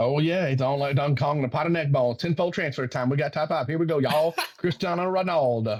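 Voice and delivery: strong Southern US North Carolina accent. Starting a top-five countdown as the North Carolina accent creeps back, North Carolina accent. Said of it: "read every single one in that voice".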